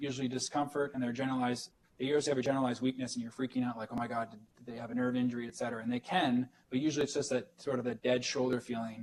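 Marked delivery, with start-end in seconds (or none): none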